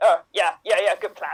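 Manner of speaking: very low, deep cartoon character voice. Acting out burglars planning a break-in: Beavis and Butthead voice. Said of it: "you sound like Beavis and Butthead".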